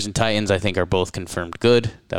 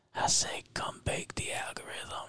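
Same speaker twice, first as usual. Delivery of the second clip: sultry, seductive, breathy hushed whisper. A host's every-episode request to the Bakers, in a sultry voice. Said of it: "in a sultry, sultry voice".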